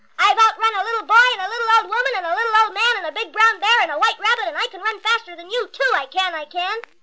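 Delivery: loud, high calling out. Narrator reads the gingerbread boy stepping closer to a fox; calling out louder. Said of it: "called out in a louder voice".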